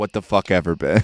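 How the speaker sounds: put-on angry, mad outburst. Retelling how his dad rolled his eyes and snapped at him, imitating an angry dad. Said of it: "why are you getting so mad".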